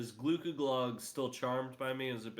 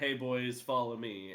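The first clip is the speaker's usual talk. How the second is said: ordinary talk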